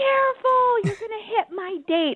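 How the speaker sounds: shouting. Retelling how a date yelled at a passing car: imitating someone yelling. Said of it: "he starts yelling at the car".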